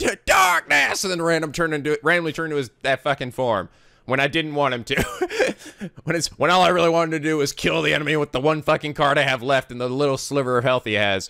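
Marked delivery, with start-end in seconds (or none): 0.0-1.0 slow, loud, high yell. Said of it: "yell out".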